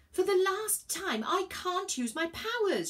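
very high-pitched, drawn-out shout. Virgo answers Elliot aboard a speeding train, shouting. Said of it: "shouted Virgo".

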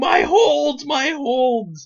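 very high, very slow, acted frantic outburst, shrill and drawn-out. Retelling a wrestler's reaction as his list is thrown away, acting out someone freaking out. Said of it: "he's freaking out".

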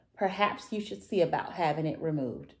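plain

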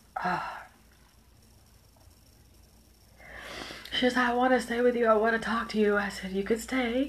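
crying while talking. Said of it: "I can't be talking and crying".

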